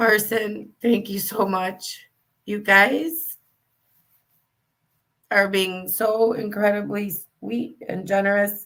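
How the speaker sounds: tearful, crying voice while talking. Thanking viewers for their generous gifts, crying while talking. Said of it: "I'm crying here".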